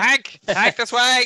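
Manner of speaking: screaming. Calling another character, Hank, to come this way: screaming at Hank. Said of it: "I'll scream at Hank".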